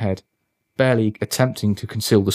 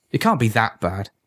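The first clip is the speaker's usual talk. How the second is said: ordinary delivery, nothing marked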